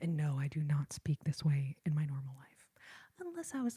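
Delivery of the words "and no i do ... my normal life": ASMR whisper spoken right into the mic. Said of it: "to speak this way for the lives".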